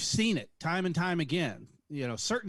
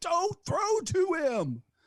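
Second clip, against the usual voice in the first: acted-out screaming, much higher, slower; 12 semitones higher than usual. Fan recalling a manager's World Series pitching choices, retelling screaming at the TV. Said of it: "You're sitting there screaming at the TV".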